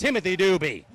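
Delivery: ordinary delivery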